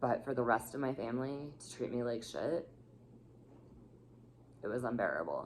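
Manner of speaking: raw, hurt, heartfelt emotional delivery. Recounting being mistreated by family, getting emotional. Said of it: "sorry, I'm getting emotional here".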